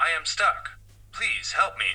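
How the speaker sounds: put-on mechanical voice with slight American twang. Repeating the voice that came from under the cupboard, mechanical American twang voice. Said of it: "a mechanical, strange, sort of slightly American twang voice".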